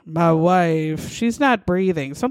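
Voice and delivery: mock emotionless, bone-dry, dead-level, with wife drawn out. Retelling a husband's 911 call about his wife, imitating a man's flat, dry delivery. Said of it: "he said it, like, so dry".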